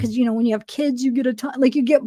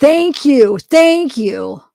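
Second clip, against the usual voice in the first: sudden, loud yell at full voice; 6 dB louder than usual. Speaker thanking someone mid-chat, yelling. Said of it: "Why did I yell that".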